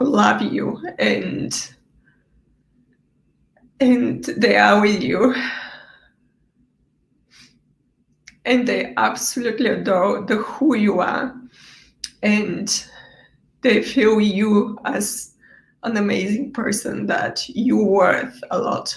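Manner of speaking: tearful, crying while speaking. Speaker telling a listener to stop blaming themselves, crying while speaking. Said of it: "if I can stop crying".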